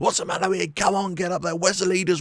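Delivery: loud, bellowing terrace-style shouting. Showing what the lone voice shouting in the stadium sounds like, stadium shouting. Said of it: "some lone voice screaming and shouting".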